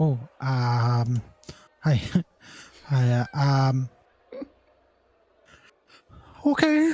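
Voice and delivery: hesitant, flustered stammer, pitch rising. Answering an offer to spar, in character: nervous. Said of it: "the most nervous okay I've ever fucking heard".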